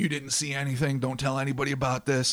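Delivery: put-on little dwarf voice with Brooklyn accent. Imagining what the little guys could have said, in a Brooklyn-sounding dwarf voice. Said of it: "Why do they sound different from Brooklyn?".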